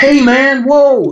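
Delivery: bad, over-the-top fake American accent, very high. Describing driving down the road in America: bad exaggerated American accent. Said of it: "That's like the worst American accent in the world".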